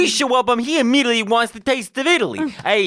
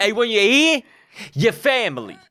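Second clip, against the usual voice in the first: put-on Italian man accent, exaggerated. Retelling an old Olive Garden commercial with an Italian guy: imitating an Italian guy.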